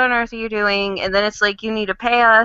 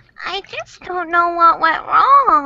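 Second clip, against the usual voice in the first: sweet, high, cutesy put-on cartoon pony voice; 8 semitones higher than usual. Answering a reminder about a forgotten pony: cute put-on voice. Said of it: "that's actually a pretty good voice".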